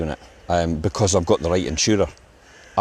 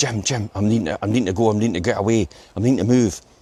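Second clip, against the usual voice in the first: mock frightened, terrified pleading, words repeating; 3 semitones higher than usual. Retelling a phone call from a tenant: imitating a terrified tenant. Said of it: "he was terrified in his voice".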